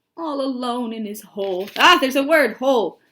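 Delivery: ordinary delivery, nothing marked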